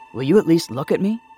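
hard, loud, stern voice. Daniel presses Naomi again to look at him, stern. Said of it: "Daniel said sternly".

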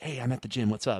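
really quiet, hushed, discreet phone voice. Retelling answering a phone call at the gym: imitating speaking really quietly. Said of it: "really quietly".

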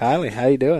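slow, methodical put-on Minnesota accent. Greeting a friend on the podcast in his voice: imitating Kyle's slow Minnesota talk. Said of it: "I can't help but talk like Kylie".

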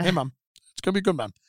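very quick, rattled-off fast talking. Retelling how Joe encouraged them before the podcast, imitating Joe Rogan talking very quick. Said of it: "he talks very quick".

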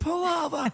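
put-on child voice, very high, frantic, panicked pleading.

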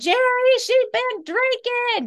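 yelling, pitched very high. Retelling mom calling out that the child had been drinking: imitating mom yelling. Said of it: "I hear her yell".

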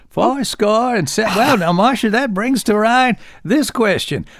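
thin, high-pitched voice. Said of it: "kind of a high-pitched and reedy kind of a voice".

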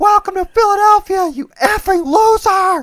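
shrill, very loud yelling. Retelling a fan at a Philadelphia stadium yelling at players, imitating a woman screaming. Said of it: "one woman just screaming".

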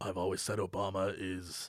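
very low, very quiet bass voice. Acting out what the host would say about Obama, imitating a really deep voice. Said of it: "he has that really really deep voice".

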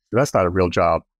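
normal talking voice

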